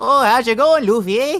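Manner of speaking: put-on Canadian accent. Imagining how Chopper would sound: Chopper with stereotypical Canadian accent. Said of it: "like Chopper having a stereotypical Canadian accent".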